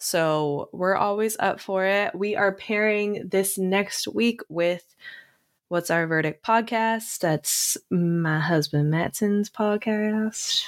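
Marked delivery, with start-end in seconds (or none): 7.2-10.6 sudden shift into an American Southern accent. Announcing next week's pairing with the speaker's husband's podcast: slipping into a Southern accent. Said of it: "I don't know why I just went to Southern accent".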